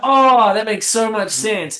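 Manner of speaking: loud, put-on British accent. Retelling someone's reply about a children's book: imitating Max Coxon's British accent. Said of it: "In his British accent that he has".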